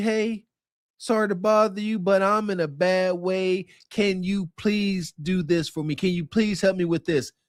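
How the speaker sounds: put-on humble pleading voice. Acting out relatives coming to ask for help: imitating a humble request. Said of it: "come to you humbly".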